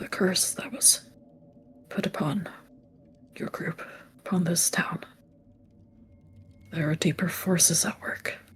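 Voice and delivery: very quiet, secretive murmur. A character leans closer to a listener and speaks, lowered voice. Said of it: "He lowers his voice yet again".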